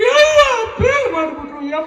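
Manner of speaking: mock crying and wailing.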